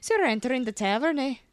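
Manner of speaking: clumsy, bad put-on Irish accent. During a dress rehearsal, a player tries out a character's bad Irish accent. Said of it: "It's my Irish".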